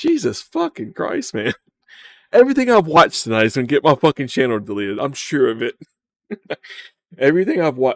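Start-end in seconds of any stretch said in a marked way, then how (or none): 7.2-8.0 voice breaking and cracking mid-line. Speaker worrying about getting their channel deleted, voice cracking. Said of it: "Oh, my voice cracked".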